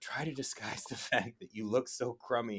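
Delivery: sidelong, hushed jab whispered under the breath. Retelling a favorite joke scene with Fry and Leela: imitating Leela whispering. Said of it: "Leela whispers".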